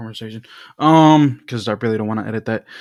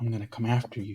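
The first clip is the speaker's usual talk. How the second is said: hushed, very soft, creepy, menacing voice; 12 dB quieter than usual. Giving an example of writing a bad message with a pencil: mock creepy threat. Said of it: "The way I said that".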